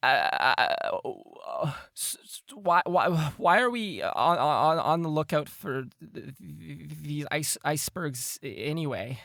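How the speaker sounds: high, stammering, stuttering through chattering teeth. Voicing a cold character asking about icebergs: stuttering, teeth chattering from cold. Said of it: "his teeth chittering".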